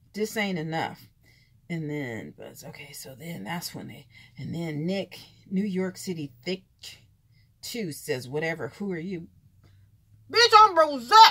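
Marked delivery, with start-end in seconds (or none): 10.3-11.1 shrill, high-pitched, very loud voice. Retell your own reply to someone asking who you are, in your Rick voice. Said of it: "in my Rick voice".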